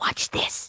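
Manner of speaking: soft, unvoiced whisper. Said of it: "I whisper".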